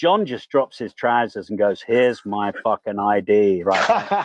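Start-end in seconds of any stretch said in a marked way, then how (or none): 1.8-3.6 put-on wasted voice, lower pitch. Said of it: "Like this".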